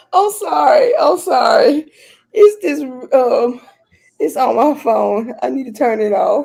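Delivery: slow speech through giggles and laughter. Apologizing after the other speaker asks what's funny, laughing while talking. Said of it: "What are you laughing at?".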